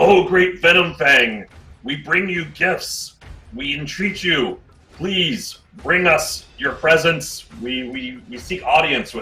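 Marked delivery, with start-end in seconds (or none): 0.0-7.5 booming, loud, high call at full volume. A character calls out at a cave entrance, shouting as loud as possible. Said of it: "he shouts out as loud as he can muster".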